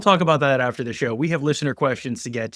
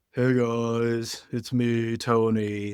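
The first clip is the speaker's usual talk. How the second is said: listless, very slow, low energy, guys dragged out; 4 dB quieter than usual. Mocking a co-host's weak opening greeting to the show, imitating Tony's low-energy hello. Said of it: "And it was just kind of like".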